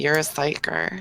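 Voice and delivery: hushed, close, leaned-in whisper. In a roleplay, leaning in close to a fellow character, whispering into her ear. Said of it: "lean in real close and whisper into her ear".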